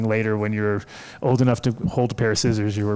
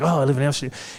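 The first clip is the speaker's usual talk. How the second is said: mock excited, all worked up and eager; 4 semitones higher than usual. Retelling what a kid said while standing in line: imitating someone getting excited. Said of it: "he got all excited".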